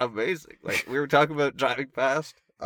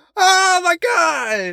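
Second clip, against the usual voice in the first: shrill, very loud, high-pitched yell; 10 dB louder than usual. Recounting a party where a guy called out to him, retelling a yell. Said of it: "And he yells".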